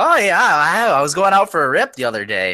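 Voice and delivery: put-on Upper Peninsula Michigan accent. Playing along with a bit, answering another speaker in a Yooper accent. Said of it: "which is kind of a Youper accent".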